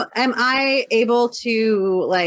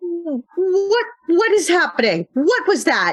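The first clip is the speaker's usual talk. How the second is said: alarmed outcry, high-pitched; 9 semitones higher than usual. A player voicing their character's reaction to a sudden sting, crying out in alarm. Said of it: "I'm gonna cry out and go".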